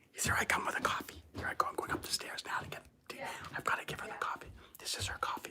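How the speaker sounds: hushed voice. Sneaking a coffee up the stairs to someone in a meeting, talking very quietly. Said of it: "so I got to talk really quietly".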